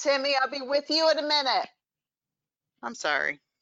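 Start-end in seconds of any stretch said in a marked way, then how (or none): 0.0-1.7 raised, high-pitched yelling call. Breaking off a call to answer a kid: yelling at a kid. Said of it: "I have to yell at my kid".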